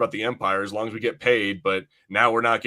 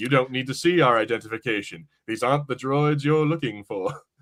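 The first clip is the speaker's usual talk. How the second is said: put-on calm, even voice. Retelling a scene where a character uses a mind trick: Obi-Wan Kenobi mind trick voice. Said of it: "he does the Obi-Wan Kenobi thing where he's like".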